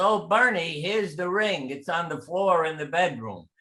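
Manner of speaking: calling out loudly, yelling. Retelling someone finding the ring while vacuuming: imitating someone yelling. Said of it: "And she yelled".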